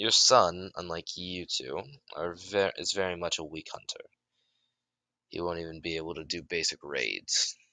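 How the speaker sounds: normal talking voice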